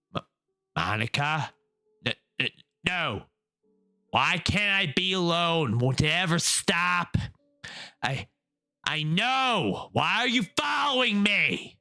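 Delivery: voice trembling with fear, shaking, frightened stammer. Reading aloud a character startled by someone behind her: voice shaking with fear. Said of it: "My voice is shaking with fear".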